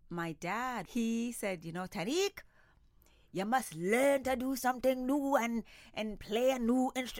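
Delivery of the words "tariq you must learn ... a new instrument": terrible put-on Trinidadian accent, pitched up. Quoting what dad once said, in a terrible Trinidadian accent. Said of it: "That's a terrible Trinidadian accent".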